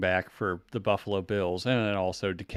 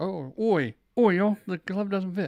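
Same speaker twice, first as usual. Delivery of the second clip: very high-pitched put-on East London Cockney accent; 10 semitones higher than usual. Imagining how a man would say it, in an east london cockney accent. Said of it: "he would say it in a East London Cockney accent".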